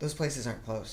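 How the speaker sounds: soft, muttered, grumbling under the breath. Retelling a remark made while others talked: imitating own muttering. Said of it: "And I just mutter".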